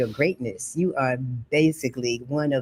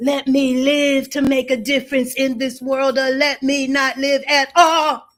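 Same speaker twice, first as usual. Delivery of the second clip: mock very high, loud screaming; 12 semitones higher, 5 dB louder than usual. Retelling coming out of a college class, imitating own past screaming. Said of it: "I was screaming".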